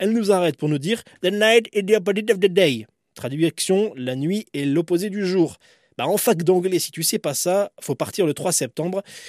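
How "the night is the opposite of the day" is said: put-on higher-pitched English with Indian accent. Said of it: "avec son accent indien".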